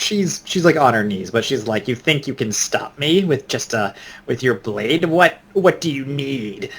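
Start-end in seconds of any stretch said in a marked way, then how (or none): 1.9-6.7 sly, cunning, scheming, conniving taunting voice. A game narrator voices a kneeling woman facing a blade: cunning, conniving voice. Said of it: "with a cunning, conniving kind of voice".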